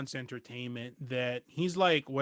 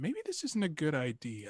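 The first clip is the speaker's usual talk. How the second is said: faint, tiny, small little voice; 3 dB quieter than usual. Speaker acts out the inner voice that warns you, in a tiny inner voice. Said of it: "it's such a tiny voice".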